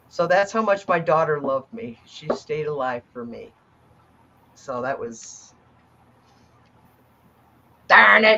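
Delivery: holding back tears. Speaking about a daughter who stayed alive for them, holding back tears. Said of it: "I'm not gonna cry".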